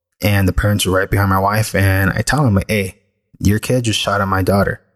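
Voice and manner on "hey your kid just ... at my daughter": normal talking voice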